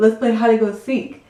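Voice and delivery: ordinary talk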